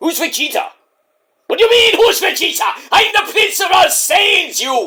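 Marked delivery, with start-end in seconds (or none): 1.5-4.9 very high, slow, drawn-out angry yell. A son questioned by his parent replies in an angry Vegeta voice. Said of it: "Calm down".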